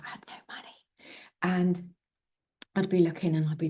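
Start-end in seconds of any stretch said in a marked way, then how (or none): 0.0-0.8 playful, half-joking hushed whisper. Telling a story about having no money, then a mock whisper. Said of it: "she whispers".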